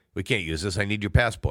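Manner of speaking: ordinary delivery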